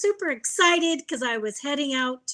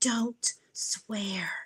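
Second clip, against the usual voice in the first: put-on mutter, lower and quieter; 3 semitones lower, 6 dB quieter than usual. Retelling a phone call with a lady: imitating someone muttering under her breath. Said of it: "the lady under her breath goes".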